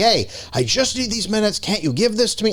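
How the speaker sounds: snappish, irritated tone. Retelling what was said to a son who kept poking: imitating snapping at someone. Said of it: "I remember I snapped at him like".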